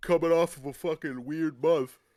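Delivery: words stretched by a yawn. You keep yawning and don't know why; say this while yawning. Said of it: "I don't know why I'm yawning so much".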